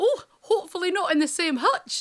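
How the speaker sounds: put-on joking Scottish accent. Quoting mum's joking reply to the Italian, in her Scottish accent. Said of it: "My mum joked in her Scottish accent".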